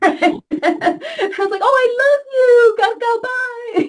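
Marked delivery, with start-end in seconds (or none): 1.6-3.9 sugary, high, put-on sweet, fake-loving voice. Speaker mocks the idea that being loving means being really nice: put-on nice high voice. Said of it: "talk in a high voice".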